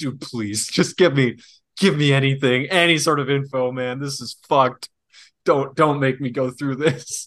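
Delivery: mock, acted-out pleading, begging tone. Retelling someone left alone after the door slams, imitating someone begging. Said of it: "just start begging".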